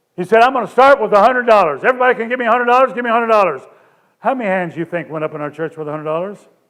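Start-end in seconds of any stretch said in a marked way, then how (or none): 0.4-3.6 auctioneer-style patter. Recounting a preacher taking up an offering for the pastor: imitating an auctioneer. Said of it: "he did it like an auctioneer".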